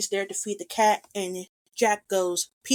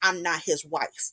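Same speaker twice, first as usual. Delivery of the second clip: put-on frustration, lower pitch; 4 semitones lower than usual. Retelling a film scene where a character denies being a wife: acting out a frustrated reply. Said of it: "Lucy is frustrated".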